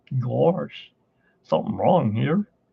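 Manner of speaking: silly, goofy cartoon dog character voice. Explaining how Bill Farmer voices characters, the speaker demonstrates the Goofy voice. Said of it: "when it comes to doing Goofy".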